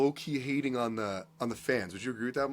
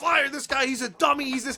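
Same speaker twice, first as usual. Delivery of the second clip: mock very high, loud, shrieking screaming rant; 12 semitones higher, 5 dB louder than usual. Recalling an earlier episode, the speaker imitates Mike screaming. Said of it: "he's screaming".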